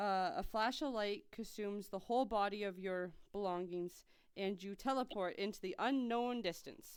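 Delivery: ordinary delivery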